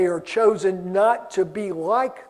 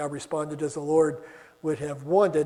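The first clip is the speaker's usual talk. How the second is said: normal talking voice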